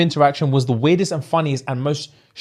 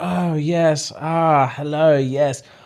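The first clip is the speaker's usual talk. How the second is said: very slow, overly polite, courteous put-on manner. Telling a friend about a man who showers his dates with compliments, imitating how he talks. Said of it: "and he talks like this".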